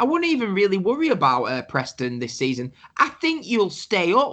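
put-on utterly earnest, sincere, dead serious tone. Retelling what a Blackpool fan said to him: imitating a dead serious tone. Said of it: "Dead serious".

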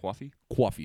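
put-on 'coffee' in New York accent. Talking about accents, imitating how New Yorkers say coffee in a New York accent. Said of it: "I love how they say coffee".

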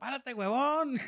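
loud, high yelling. Recalling what he yelled at a man he watched play, retelling a yell. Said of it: "y yo le gritaba".

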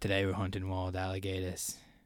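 put-on Australian accent. Put on the spot to prove he can do it: put-on Australian accent. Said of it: "You said that you can".

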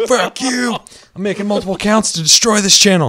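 mock angry yell.

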